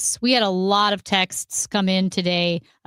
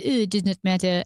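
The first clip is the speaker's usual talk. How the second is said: put-on French accent. Retelling a line a listener praised, in a put-on french accent. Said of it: "loved my Italian accent when I said".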